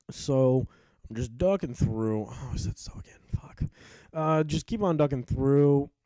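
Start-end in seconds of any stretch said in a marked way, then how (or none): 2.3-3.6 whispered under the breath, to oneself. Narrating ducking through enemies, the speaker reacts to himself, whispering to himself. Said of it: "I whispered to myself".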